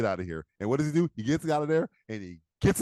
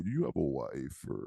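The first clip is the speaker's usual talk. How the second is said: deep voice, lower and quieter; 11 semitones lower, 9 dB quieter than usual. Showing again how the villain's line should sound: low register voice. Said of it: "you gotta go low register".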